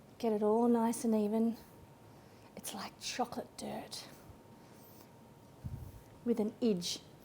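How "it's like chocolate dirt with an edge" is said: quick New Zealand accent, briefly slipped in. Describing a cake layer while baking, kiwi accent. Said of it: "That was a Kiwi accent then".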